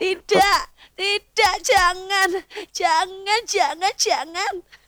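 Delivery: scary horror-style voice. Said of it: "suaramu kok berubah jadi horor gitu".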